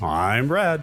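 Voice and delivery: radio announcer delivery. Podcast co-host repeating his intro line; announcer voice. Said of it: "I've developed a little bit of an announcer voice".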